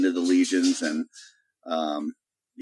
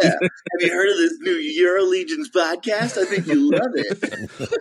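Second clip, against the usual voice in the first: put-on very high, try-hard, kid-like buddy voice; 12 semitones higher, 4 dB louder than usual. Continuing the bit of an adult posing as a student, plugging the podcast: Steve Buscemi acting like a student. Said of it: "that clip of Steve Buscemi".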